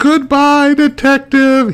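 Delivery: cackling laugh. A narrator reads a man's parting words to the detective as guards hurl him out a window, cackling. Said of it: "he cackles as he flies out the window".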